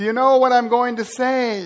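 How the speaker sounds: nervous, trembling, quivering voice. Retelling a new preacher's first sermon to the brothers, imitating a quivering voice. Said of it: "his voice is quivering when he says".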